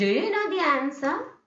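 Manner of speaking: high, rising, hopeful question-like intonation. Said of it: "always it is rising tone".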